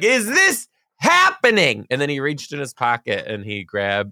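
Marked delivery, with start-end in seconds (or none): 0.0-1.9 mock, very high, loud, swooping, excited scream. Retelling the moment of a marriage proposal, imitating own past screaming. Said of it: "screaming on the".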